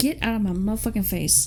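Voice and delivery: ordinary delivery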